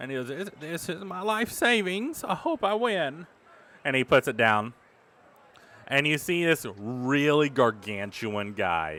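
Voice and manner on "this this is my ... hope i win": frail, trembling little voice, pitched up. Voicing a frail, very skinny contestant handing over his savings: frail, shaking man. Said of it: "he's kinda shaking a bit".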